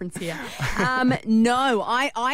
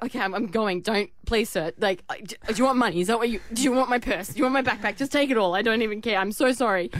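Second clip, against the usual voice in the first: plain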